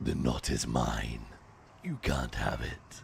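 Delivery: smooth, very low, creaky demonic honeyed voice. Describing a voiceover, the speaker tries to replicate it in a demonic honeyed voice. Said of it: "demonic honey poured into the ear".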